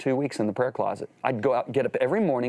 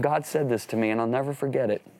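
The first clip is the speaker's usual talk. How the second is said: ordinary delivery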